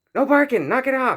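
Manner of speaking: loud, high-pitched shouting.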